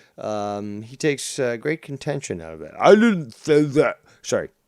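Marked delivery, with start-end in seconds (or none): 2.8-4.0 high, raised, contentious, offended, indignant voice. Imitating Scott denying what he said, after listing the insults. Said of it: "I know I'm not good at the impressions".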